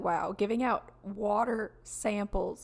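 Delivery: ordinary delivery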